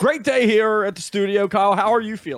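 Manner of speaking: loud, very high put-on radio DJ patter. Starting a mock radio show bit, greeting the co-host, in a radio voice. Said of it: "we'll get the radio voice going".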